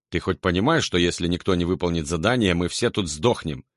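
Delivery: plain reading voice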